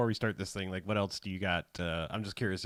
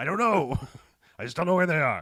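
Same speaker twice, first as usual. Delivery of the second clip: put-on old grandpa voice, pitched up and loud; 8 semitones higher, 7 dB louder than usual. Playing a grandpa who lost his grandkids, in a Grandpa Al Pacino voice. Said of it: "I'm Grandpa Al Pacino".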